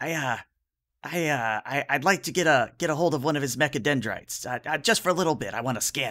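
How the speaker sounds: nervous, fidgety voice. Voicing a small character who fidgets under a player's gaze: nervous fidgeting character. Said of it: "he starts to fidget a little under your gaze and says".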